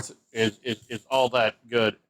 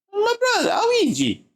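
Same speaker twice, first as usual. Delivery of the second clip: put-on Italian cartoon voice, higher; 4 dB louder than usual. Joking while picking players, in a Mario voice. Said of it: "Why am I talking like a Mario?".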